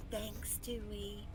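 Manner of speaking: barely-there, very soft, hushed half-whisper. Clutching a poem in character and thanking Dewey: half-whispering in character. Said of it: "I'm gonna whisper".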